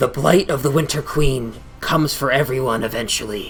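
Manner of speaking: deep, low, rasping, rough-edged gravelly voice. Game narrator voices a creature speaking with two voices at once, deep gravelly voice. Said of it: "in a kind of deep, kind of gravelly uh, voice".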